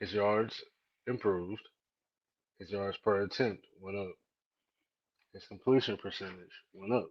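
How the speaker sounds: hushed, very quiet, low voice. Defending a quarterback's improved stats while walking through an office: lower voice. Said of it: "Why you said it with a lower voice?".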